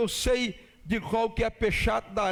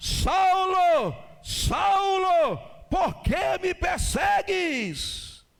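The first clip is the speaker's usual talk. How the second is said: mock very slow, high, drawn-out crying out, words stretched long; 9 semitones higher than usual. Acting out the voice that cries out to Saulo on the ground: voice crying out. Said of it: "uma voz brada".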